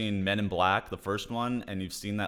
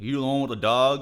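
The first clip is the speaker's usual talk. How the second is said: louder put-on Texas man's voice; 4 semitones higher, 5 dB louder than usual. Retelling what a man asked about the dogs: Texas guy impression. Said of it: "It literally sounded just like the voice I did".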